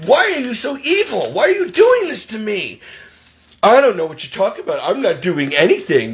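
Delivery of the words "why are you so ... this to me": heated, high-pitched, raised yelling. Retelling an argument with an old lady, re-enacting own past yelling. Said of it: "I'm yelling at you because you".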